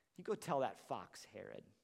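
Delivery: put-on snarky, caustic voice. Imagining Jesus looking at the Pharisees, a mock-snarky voice. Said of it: "with like a snarky voice, like a caustic voice".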